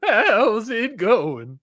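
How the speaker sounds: put-on high-pitched old western frontier man voice. Speaker greets Tomas in a voice like someone from Gunsmoke: old western man. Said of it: "He's someone from Gunsmoke".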